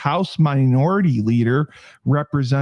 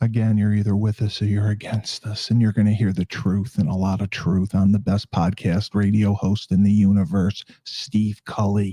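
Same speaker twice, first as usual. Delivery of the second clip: whispered, lower pitch; 5 semitones lower, 3 dB quieter than usual. Introducing the host at the top of a political talk show, whispering. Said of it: "Why are you whispering?".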